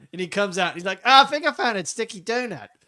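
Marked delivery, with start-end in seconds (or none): 1.0-2.6 put-on, high, pitched-up cartoon character voice. Retelling a South Park scene from the toilet: Cartman impression. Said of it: "Do I do a good Cartman impression?".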